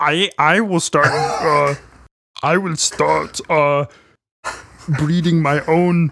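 put-on slowed-down, thick German accent. Voicing the giants' high wizard as Arnold Schwarzenegger. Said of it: "He sounds just like Arnold Schwarzenegger".

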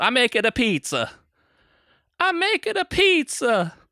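very high, very slow, drawn-out fake Italian accent. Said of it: "[name], basically, the whole movie just goes".

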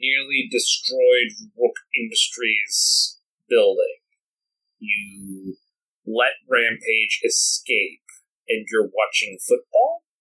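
distorted voice, warped as through a helmet. An armored man enters and surveys the room, distorted voice from armor. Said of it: "in the sort of distorted voice from the armor".

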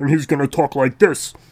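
grumpy construction-worker puppet voice. Showing how a grumpy puppet talks: low Frank Oz voice. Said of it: "I'm going for that low Frank Oz construction worker".

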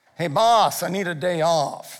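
slow, gangster-style wiseguy mobster drawl. Telling a story, voicing a character speaking to his boss in a mobster voice. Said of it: "I don't know why he sounds like a mobster".

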